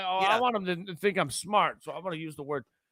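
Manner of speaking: high, mocking, pretentious show-off voice. Mocking writers who use big words to seem smart: imitating a show-off writer. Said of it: "be all fancy and like".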